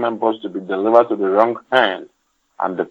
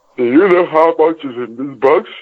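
spoken through a yawn with rising pitch; 6 semitones higher, 3 dB louder than usual. Asking the other speaker a question while yawning. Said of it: "Were you yawning then?".

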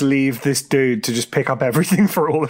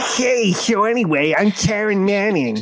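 annoying, high, grating, drawn-out voice; 6 semitones higher than usual. Mocking an actor's voice while watching a film: imitating Taron Manning's annoying voice. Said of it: "she has a really annoying voice that's like".

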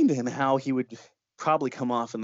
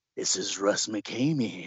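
sinister put-on creepy voice, slow and drawn out; 4 semitones lower than usual. Act out the man calling around midnight and giving his name, in Russ McKamey's creepy voice. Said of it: "he puts on a creepy voice".

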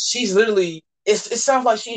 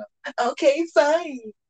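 high, put-on young woman's voice; 7 semitones higher than usual.

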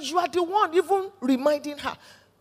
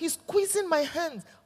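ordinary delivery

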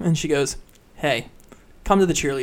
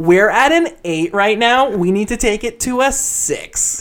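mock screamed head-cheerleader voice, high and loud; 5 semitones higher, 4 dB louder than usual. Retelling the head cheerleader standing on a table in her living room: retelling a cheerleader's scream. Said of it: "she screams in her loud cheerleader voice".

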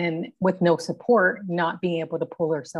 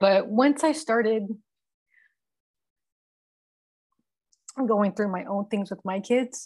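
fighting tears, higher pitch; 3 semitones higher than usual. Answering a question about family and raising kids, holding back tears. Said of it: "I'm gonna try to get through this without crying".

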